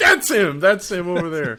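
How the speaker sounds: high, loud, excited shout.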